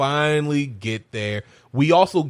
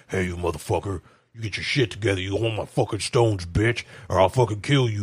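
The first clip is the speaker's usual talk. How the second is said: put-on enraged voice, low and furious; 4 semitones lower than usual. Retelling a scene where the villain threatens someone: imitating a furious threat. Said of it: "You imagine that's how he sounds".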